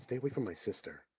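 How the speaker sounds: very quiet, hushed whisper. Whispering a warning into another character's ear: whispering. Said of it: "I whisper into his ear".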